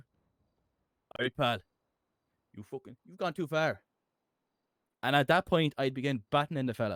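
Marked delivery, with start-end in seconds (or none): 0.0-3.8 firm, stern police officer voice. Acting out a police officer confronting a trespasser: putting the foot down. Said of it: "what does it sound like when you put your foot down".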